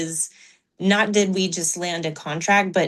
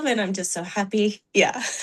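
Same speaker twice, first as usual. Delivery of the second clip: voice on the edge of crying, holding back tears. Sharing good news about the club with another speaker, holding back tears. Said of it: "Trying not to cry".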